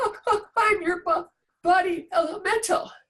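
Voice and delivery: mock frightened, halting, high little voice. Retelling a lucid dream, the speaker quotes a frightened reply, imitating a very scared voice. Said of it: "in this very scared voice".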